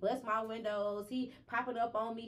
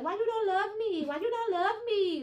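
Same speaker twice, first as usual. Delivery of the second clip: high, loud fake Caribbean accent; 11 semitones higher, 7 dB louder than usual. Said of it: "doing the fake like Caribbean accent".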